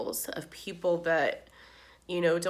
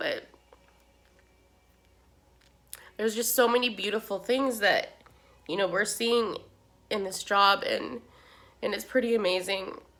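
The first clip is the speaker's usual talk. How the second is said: crying through words, tearful, voice breaking; 3 semitones higher than usual. Talking about a family coping with their daughter's death, crying. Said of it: "I really can't believe I'm crying".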